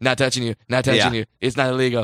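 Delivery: put-on taunting tone. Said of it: "Just like".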